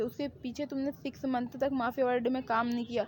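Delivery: plain reading voice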